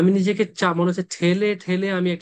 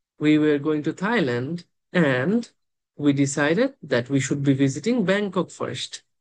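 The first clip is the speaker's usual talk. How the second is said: brief, slight pause right after the word "and"; 3 semitones lower than usual. English lesson on joining sentences with and: slight pause at and. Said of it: "আমি এন্ডে সেটা পজ দিছি".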